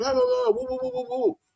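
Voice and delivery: very high, rough, abusive ranting yelled babble. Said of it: "even just yelling".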